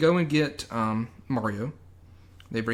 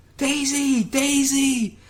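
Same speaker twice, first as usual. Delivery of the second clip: very high screamed, shouted call. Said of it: "Luigi screaming back".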